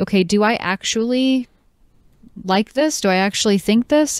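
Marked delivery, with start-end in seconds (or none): none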